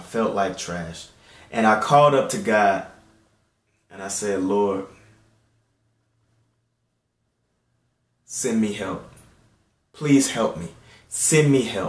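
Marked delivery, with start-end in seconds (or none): 4.4-11.9 mock crying, tearful, pleading, begging voice. Recounting praying to God after feeling dirty, retelling crying out to God. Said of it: "And I'm crying".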